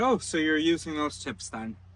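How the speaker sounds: mock sarcastic jab, sarcastic retort. Recounting a sarcastic reply to her: retelling a sarcastic remark. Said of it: "I sarcastically said".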